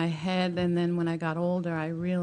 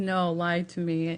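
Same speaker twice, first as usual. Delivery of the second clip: ordinary delivery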